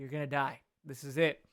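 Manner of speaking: acted-out panic, mock-panicked voice. Retelling thoughts as the plane stalls and falls upside down, retelling own panic. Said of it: "I started kind of panicking".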